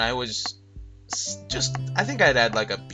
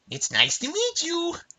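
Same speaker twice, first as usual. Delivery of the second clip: annoying grating character voice, much higher. Imitating a game character's line, in the most annoying game voice. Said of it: "That was the voice".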